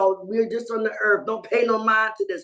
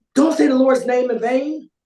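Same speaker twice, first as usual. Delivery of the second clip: put-on sharp, raised, slicing machete voice; 3 semitones higher, 6 dB louder than usual. Retelling what a person said to them, imitating a sharp, cutting machete voice. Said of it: "They came out with this machete voice".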